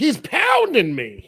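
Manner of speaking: acted-out, shrill, very high, full-throated yell. Imagining a serious sex scene between her and Robert De Niro: imitating Shelley Winters shouting. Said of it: "she'd be, still be shouting, like".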